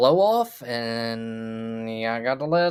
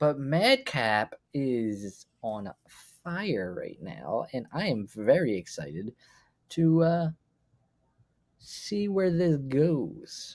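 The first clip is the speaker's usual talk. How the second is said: hushed, kept down, as quiet as possible; 3 semitones higher, 3 dB quieter than usual. Speaking so the people discussed won't overhear, talking as quietly as possible. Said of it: "I'm trying to talk as quietly as I can".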